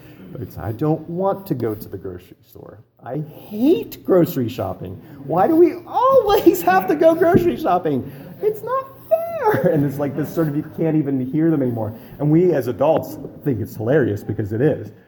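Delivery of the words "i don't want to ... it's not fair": put-on very high, whiny child voice, pitch rising ever higher. Illustrating how an unhappy little girl complains, imitating a child's rising pitch. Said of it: "ever-increasing pitch of voice".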